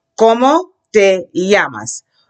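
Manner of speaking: slow, deliberate, drawn-out classroom-model delivery. Modelling a Spanish question for the class to repeat, slowly. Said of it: "let's take it slowly".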